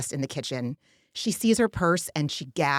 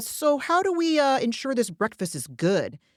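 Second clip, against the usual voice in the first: mock, smarmy, dripping with snark, pitched up; 7 semitones higher than usual. Retelling Jesse's question about breakfast, in Jesse's mock snarky, smarmy voice. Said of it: "in his snarky, smarmy voice".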